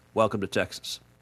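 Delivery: dry, quiet, flat, expressionless deadpan. Recalling what the speaker told a friend after shooting him: retelling a deadpan line. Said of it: "I turned to him and just deadpanned".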